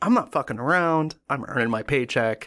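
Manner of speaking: normal talking voice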